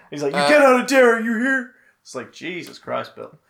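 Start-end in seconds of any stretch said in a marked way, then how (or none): 0.4-1.8 put-on crazy old man yell, higher and louder. Retelling a film scene where a crazy old man yells at children: imitating a crazy old man yelling. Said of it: "crazy old man yelling at children".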